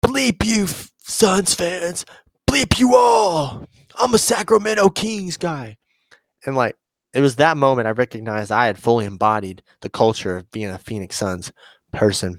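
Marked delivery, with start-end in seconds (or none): 0.0-5.8 very high, drawn-out yell. Retelling a kings fan taunting suns fans after a game: imitating someone yelling.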